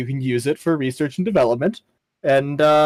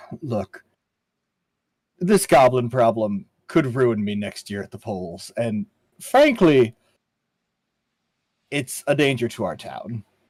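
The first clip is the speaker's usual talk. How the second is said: voice lowered a little, a touch quieter, discreet; 3 semitones lower than usual. Playing a character who eyeballs the door before speaking: slightly lowered voice. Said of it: "lowers his voice just a little bit".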